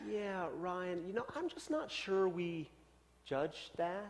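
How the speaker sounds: most gentle, affirming, soft-spoken voice. Ryan retells how Sally answered him; imitating Sally's gentle, affirming voice. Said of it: "in the most gentle voice, affirming voice".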